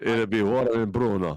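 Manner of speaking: put-on, clumsy, loud Italian accent. Wondering how a tool brand's name sounds in Italian, in a bad Italian accent. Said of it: "just do a bad Italian accent".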